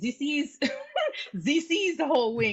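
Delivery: put-on Russian or Ukrainian accent. Retelling what the server said about the wings: imitating a Ukrainian or Russian accent. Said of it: "So she had an accent".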